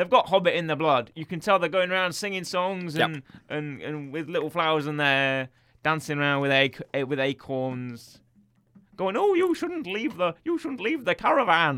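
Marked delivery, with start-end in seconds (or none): 9.2-11.8 put-on Irish accent, higher, slower. Describing the Harefoots dancing around with flowers, Harefoots' Irish accent. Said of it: "They're all Irish".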